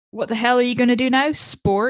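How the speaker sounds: usual speaking voice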